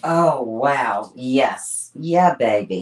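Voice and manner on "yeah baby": low, cheeky, groovy swinging-sixties British voice. Working epoxy into a piece and exclaiming, sounding like Austin Powers. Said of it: "I sound like Austin Powers".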